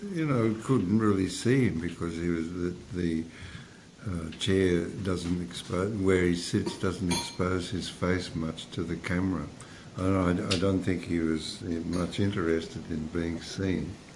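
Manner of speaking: very soft, quiet, barely audible voice.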